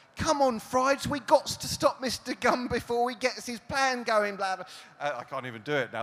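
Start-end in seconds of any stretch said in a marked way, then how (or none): 0.2-4.7 very high, loud, belted bluesy urchin voice. A speaker demonstrates how the heroine Polly talks: Polly's street-urchin blues voice. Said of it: "a Dickensian street urchin and a Mississippi blues guitarist".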